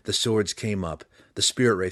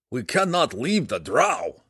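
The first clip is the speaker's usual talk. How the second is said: words forced out through gritted, clenched teeth; 4 semitones higher, 4 dB louder than usual. Belwar replies after being warned, speaking through clenched teeth. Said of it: "he replied through clenched teeth".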